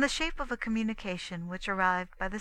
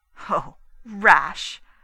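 very loud, derisive, mocking delivery; 14 dB louder than usual. Reading fiction aloud, the narrator voices a woman answering the narrator, mocking. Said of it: "Her voice mocked at my prudence".

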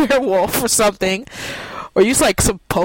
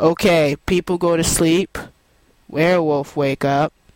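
low, flat, boring, lifeless monotone drone; 5 semitones lower than usual. Advising game narrators what not to do: a Ben Stein monotone. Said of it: "I'm a boring monotone man. I speak in monotone".

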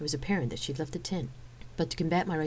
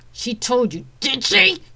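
very loud, high-pitched, slow, drawn-out shouting; 9 semitones higher, 14 dB louder than usual. The narrator confronts a guardsman who left his royal post; shouted. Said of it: "I shouted".

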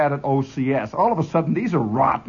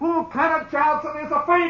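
mock holler, much higher in pitch; 10 semitones higher than usual. Recounting a company of soldiers in gas masks, imitating someone hollering. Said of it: "somebody hollers".

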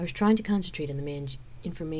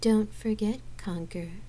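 very saccharine, syrupy, pitched-up voice; 5 semitones higher than usual. A woman speaks to the man as he leaves the room, very saccharine voice. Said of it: "Gabrielle began in a very saccharine voice".

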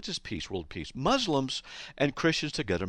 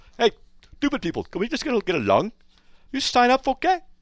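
bad put-on Arabic accent, pitched up; 12 semitones higher, 9 dB louder than usual.

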